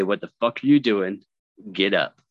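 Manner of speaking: put-on deep, gruff voice. Recounting a psychotic episode, quoting the voices heard, imitating a deep, gruff voice. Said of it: "very distinct voices, kind of like mine, like deep and gruff".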